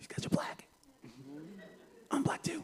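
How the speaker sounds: acted awed, gasping, quick breathy whisper. Recalling opening a band's tape as a kid, retelling an amazed gasp.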